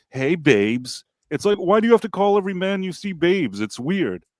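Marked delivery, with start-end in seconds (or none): 0.2-1.1 put-on flamboyant voice. Complaining about a TV character's habit of calling men babes, imitating him flamboyantly. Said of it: "He's like".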